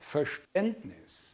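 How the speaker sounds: Verständnis said with stress.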